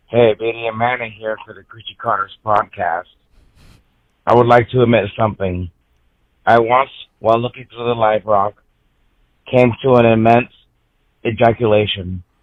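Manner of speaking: odd cadence like a voice machine. Leaving a recorded message for a podcast: odd cadence like a voice machine. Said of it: "it's a cadence of Stephen Hawking's voice machine".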